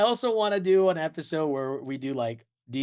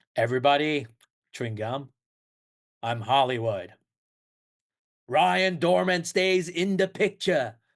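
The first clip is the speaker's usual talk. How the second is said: put-on 1950s Brooklyn producer-style accent. Daydreaming aloud about being an old Hollywood producer: 1950s Brooklyn film producer accent. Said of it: "film producer from, like, Brooklyn, New York with, like, an accent".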